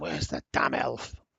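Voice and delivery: low mutter, grumbling under breath. As the party walks in, a narrator voices a character: muttering under his breath. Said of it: "you can hear him under his breath".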